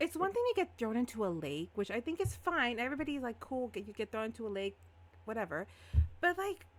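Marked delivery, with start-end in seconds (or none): none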